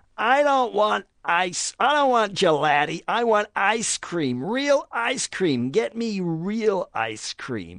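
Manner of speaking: loud, shrill, very high, repulsive snarling. Retelling a woman's demand for real ice cream in a restaurant, imitating a loud repulsive snarl. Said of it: "such volume and such a repulsive kind of snarl in her voice".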